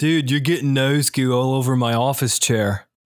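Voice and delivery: put-on Delaware accent. Imagining what someone at the office might have said: Delaware accent. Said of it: "that was my Delaware accent".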